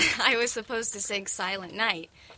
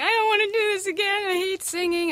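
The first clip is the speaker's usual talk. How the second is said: very high, sobbing wail, acted out, crying scream; 10 semitones higher, 4 dB louder than usual. Recalling running offstage to mom behind the curtains, retelling screaming and crying. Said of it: "I'm screaming and crying".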